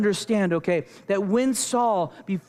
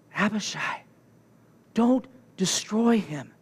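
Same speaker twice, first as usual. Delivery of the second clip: slow, drawn-out stage whisper. Narrator retelling the story, David answers Abishai: half-whispering. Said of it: "David whispers back".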